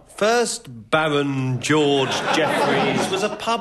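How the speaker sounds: very slow, drawn-out, every word stretched.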